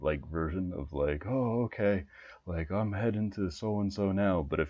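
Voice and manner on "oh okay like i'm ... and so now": put-on tired, exasperated voice. Retelling a game line said while web slinging: imitating a tired, exasperated voice. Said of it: "tired, like, exacerbated".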